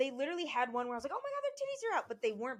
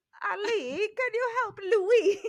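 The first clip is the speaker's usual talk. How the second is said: fake, bad Italian accent, very high and very loud; 9 semitones higher, 10 dB louder than usual. Player calling on ali to help louis in the scene: bad italian accent. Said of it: "you went Italian all of a sudden?".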